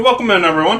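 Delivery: speaking with mouth full. A streamer greets the chat while eating dinner; talking while eating. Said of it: "Excuse me, I'm eating".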